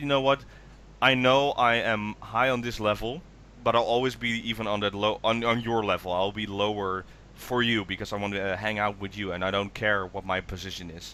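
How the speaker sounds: ordinary talk, nothing marked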